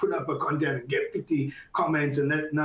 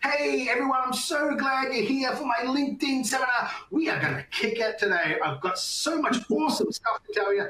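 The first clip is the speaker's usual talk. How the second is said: very high, wildly exaggerated, crazy over-the-top delivery; 9 semitones higher than usual. Showing how to talk into a voice cloner, overreacting really crazy. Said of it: "talk into your voice cloner really, really crazy".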